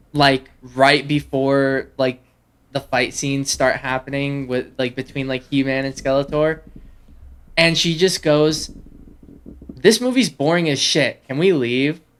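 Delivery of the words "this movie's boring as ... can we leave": normal talking voice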